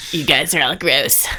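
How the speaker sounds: very low, soft character voice. In a role-play game, a player speaks in character, Peter character voice. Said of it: "Great character voice".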